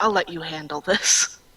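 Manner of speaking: muttered aside, under the breath. Clark turns away and pats Threnody's shoulder so only Threnody hears, muttering. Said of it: "he mutters".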